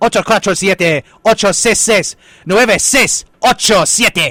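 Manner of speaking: loud, high Spanish radio announcer delivery. Reading out the station phone number fast, like a Spanish radio announcer. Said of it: "like a Spanish person on the radio would do it".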